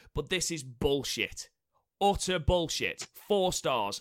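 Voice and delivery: furious, well annoyed, fuming angry voice. Complaining about a match rated four stars: angry. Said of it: "I've never heard you so angry".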